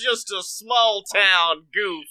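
silly cartoon-dog character voice. Teasing the other speaker about the impression they pulled off: Goofy voice. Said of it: "this Goofy voice you pulled off where he's like".

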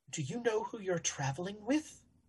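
very soft, hushed, under the breath. A gentleman approaches the traveller who won the luck roll: very quiet. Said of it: "he'll very quietly say".

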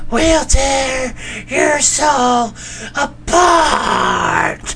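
put-on woman's voice, very high, slow, drawn out. Speaker redoes a line just heard, now in a put-on woman's voice. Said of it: "put that in a woman's voice".

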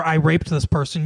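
ordinary talk

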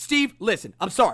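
put-on frenetic, aggressive tone. Imitating Michael's apology to another speaker: imitating Michael's frenetic, aggressive apology. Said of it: "it's frenetic and it's aggressive".

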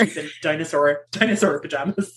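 ordinary talk

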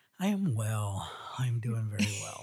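sighing while speaking. Answering another speaker who asks how you are: sighing while speaking. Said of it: "The sigh in your voice".

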